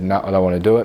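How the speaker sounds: normal talking voice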